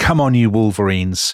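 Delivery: normal talking voice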